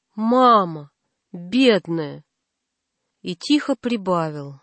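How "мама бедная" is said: loud, much lower pitch. Narrator reading a little boy's answer to his mother kneeling before him, loud. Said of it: "он ответил громко".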